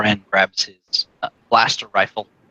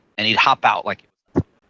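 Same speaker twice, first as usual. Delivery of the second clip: normal talking voice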